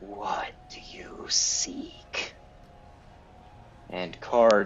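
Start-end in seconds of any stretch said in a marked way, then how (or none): 0.0-2.4 very slow, raspy, drawn-out skeleton whisper. Narrator voices a skeleton at a stall as Card approaches, raspy skeleton whisper. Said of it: "the skeleton whispers in a raspy voice".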